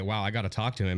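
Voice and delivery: ordinary talk, nothing marked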